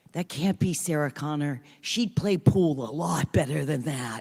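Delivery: stage whisper, loud. Retelling what someone said while the speaker shot pool, in a stage whisper. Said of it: "someone say in a stage whisper".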